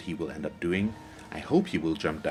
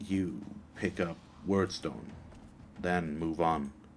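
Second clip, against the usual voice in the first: soft, caveman-style voice; 5 dB quieter than usual. Giving game instructions to viewers, talking like a caveman. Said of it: "I'm talking like a caveman there".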